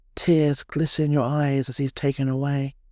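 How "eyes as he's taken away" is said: plain reading voice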